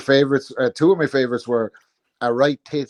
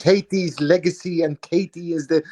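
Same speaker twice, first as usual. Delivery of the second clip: put-on higher, slow Dublin accent softened toward American. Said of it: "he tries to convert his Dublin accent to the Americans".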